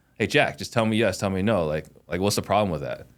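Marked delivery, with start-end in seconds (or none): 0.2-1.7 aggressive, hot, pushy, pressing delivery. Demonstrating delivery of a blunt yes-or-no request, coming in hot. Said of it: "if you come in as you know hot".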